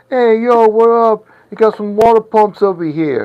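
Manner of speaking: put-on New York accent, pitched very high. Showing how a presenter with a New York accent would sound. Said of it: "with like a New York accent, be like".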